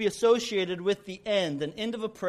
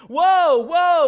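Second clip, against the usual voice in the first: shrill, very high, very loud frantic full-throated scream; 10 semitones higher, 12 dB louder than usual. Telling a story about a rider on a runaway horse, imitating a scream. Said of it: "He's screaming".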